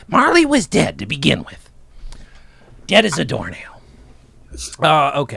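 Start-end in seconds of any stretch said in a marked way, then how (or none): 0.1-3.8 raspy, creaky, swooping puppet character voice. Opening a discussion with a quoted line: Muppet impression. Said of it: "That was a Muppet impression".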